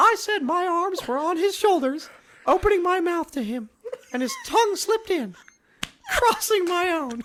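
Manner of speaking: put-on cartoon mouse voice. Reading a long romantic paragraph aloud in a Mickey Mouse voice. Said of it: "Mickey Mouse".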